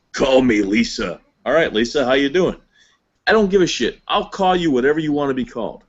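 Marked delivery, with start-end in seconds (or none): 0.1-1.1 put-on big gruff biker voice, slower. Imagining what a big old gruff biker guy says to the speaker: gruff biker guy voice. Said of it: "this big old gruff biker guy says".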